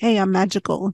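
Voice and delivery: sly, knowing, aside-like tone. Retelling the fairy godmother's aside to the audience: imitating a sly wink to the audience. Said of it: "nudge, nudge, wink, wink to the audience".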